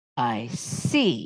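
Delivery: low, scornful, contemptuous tone. She lets go of a nervous man, who reels back against the wall: scornful. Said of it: "she said scornfully".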